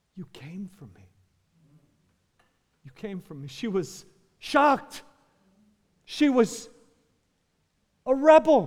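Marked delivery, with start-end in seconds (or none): 0.2-3.5 very quiet, soft whisper through weeping. Retelling a rescued daughter's words to her father: imitating a tearful whisper. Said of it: "she kind of whispers this".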